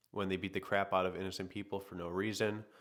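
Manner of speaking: ordinary talk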